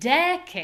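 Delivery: long clear de, short cade. Pronunciation lesson joining two syllables: decade stressed on first syllable. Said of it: "a clear, long, high syllable, de. And now we're going to make a short, unclear, low syllable".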